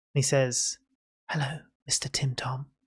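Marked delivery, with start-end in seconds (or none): 1.3-2.6 put-on hushed whisper in a small boy's voice. Describing a voice heard right in your ear, a whispering small boy's voice. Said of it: "it sounds like the voice of a small boy ... he whispers".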